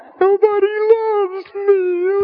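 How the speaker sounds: put-on very high, self-pitying, pitiful whine. Mocking someone who shuts the door and feels sorry: mock pitiful self-pity. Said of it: "act pitiful".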